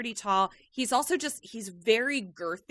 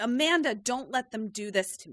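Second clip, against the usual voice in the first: mock angry, desperate pleading, pitch swinging wide. Retelling a tv scene of being escorted out: imitating someone angry. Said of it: "he gets really mad at Amanda".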